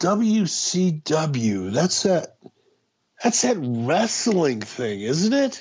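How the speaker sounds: mock scornful, very slow, dismissive, disdainful drawl. Retelling a fellow passenger's reply: imitating a disdainful voice. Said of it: "the disdain in his voice".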